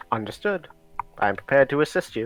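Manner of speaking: steady, even, neutral voice. Voicing the armor greeting its authorized user: neutral armor voice. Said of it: "there's this neutral voice".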